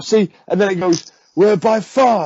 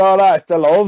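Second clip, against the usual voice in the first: put-on slow drawl in the speaker's own accent; 3 semitones higher, 3 dB louder than usual. Imitating how the Pope really talks off camera: imitating the Pope's accent. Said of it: "all that accent".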